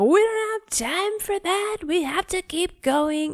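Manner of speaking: exasperated high-pitched yelling. A parent retells losing it at a four-year-old on the walk to school, retelling a yell. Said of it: "I'm yelling".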